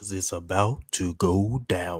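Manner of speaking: put-on deep radio voice. Joking after the others talk about a big year: imitating Bear Project's deep radio voice. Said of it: "Trying to sound like Bear".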